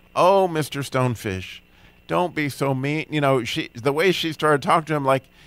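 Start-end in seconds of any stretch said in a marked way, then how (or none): 0.2-3.1 fond, adoring voice. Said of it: "treated this stonefish like he was her favorite".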